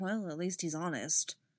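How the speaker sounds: mumbled under breath. Stas reacts to Alpha's blunt one-word answer, muttered. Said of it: "Stas muttered".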